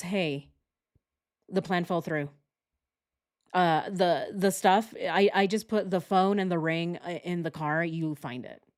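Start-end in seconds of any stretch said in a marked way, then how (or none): none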